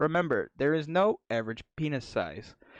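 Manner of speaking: robotic cadence, gaps between each word. Retelling what a woman's voice said, heard in 5th grade, in robotic cadence. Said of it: "in like a really robotic cadence".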